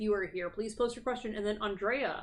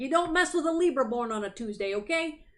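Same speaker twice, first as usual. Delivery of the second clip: bad put-on tough-guy street gangster voice; 4 semitones higher, 4 dB louder than usual. Rereading a chat message as someone else: put-on gangster voice. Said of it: "kind of like a, a gangster".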